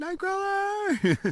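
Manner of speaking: very high, slow, drawn-out yell.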